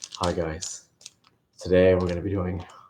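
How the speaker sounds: quiet, low, lifeless flat monotone. Imitating how a reviewer opens his reviews, quiet monotone impression. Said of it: "he's just so monotone and so just quiet".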